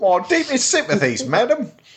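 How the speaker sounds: put-on very high-pitched Cockney accent. Showing a fellow speaker how to say the line, doing Bert from Mary Poppins. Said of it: "Do it Bert in Mary Poppins".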